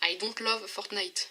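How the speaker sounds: put-on English accent. French speaker switching into english for viewers, english accent. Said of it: "Vous avez vu mon accent anglais".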